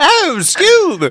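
English accent, very high and loud. Imagining the cartoon character speaking English-accented: Shaggy with an English accent. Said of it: "Can you imagine Shaggy with a, with an English accent?".

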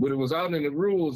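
plain

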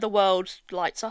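normal talking voice

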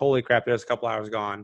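normal talking voice

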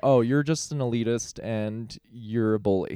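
ordinary talk, nothing marked

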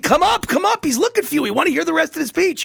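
put-on shrill, very high crowd screaming. Retelling the crowd calling to come forward: imitating a crowd screaming. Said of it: "they all started screaming".

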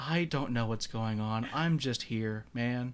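put-on, slow, dry, expressionless deadpan. Describing a favorite show character's actor, imitating his deadpan delivery. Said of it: "His like deadpan delivery for everything".

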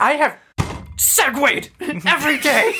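temper tantrum voice.

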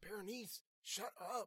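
high-pitched hiss. The narrator tries to hush berenice during her crying fit: hissed. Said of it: "I hissed".

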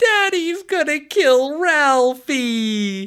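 put-on high, small, sweet, very slow little-kid voice. Speaker retells Randy, hiding under the sink, answering his mom, in Randy's little adorable voice. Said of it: "he says in his little adorable voice".

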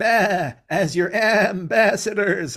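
high, loud, drawn-out sheep bleat. Retelling an episode where a judge sheep speaks in court; bleating judge-sheep voice. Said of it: "I actually like the way the sheep talk".

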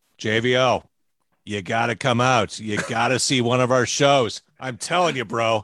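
different voice, coaxing and urging. Retelling how a friend urged a visit to a show: Jim Lynam impression. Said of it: "That's a good Jim Lynam".

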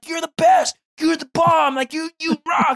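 very high, loud, gushing excited cheering. A parent re-enacts cheering a daughter for using the potty, retelling own excited yelling. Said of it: "I'm screaming, I'm yelling".

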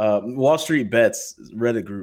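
ordinary delivery

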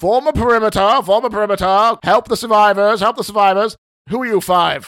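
gruff, gnome-like barking. A narrator voices a bold gnome landing among the group, barking orders.

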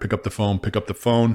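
plain

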